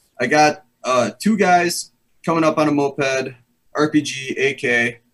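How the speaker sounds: put-on broken Cuban-accented English. Quoting a guy from Cuba, imitating his broken Cuban English. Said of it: "so it's like kind of broken English".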